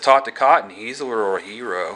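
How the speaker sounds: normal talking voice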